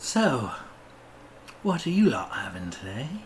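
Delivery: coy, flirtatious voice. Voicing a barkeep flirting with customers at the tavern: flirtatious barkeep voice. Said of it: "bats her eyes flirtatiously".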